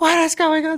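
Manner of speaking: mock very high, frantic, panicked yelling outburst. Retelling a mom who finally answered the phone: imitating mom losing her mind. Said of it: "losing her mind".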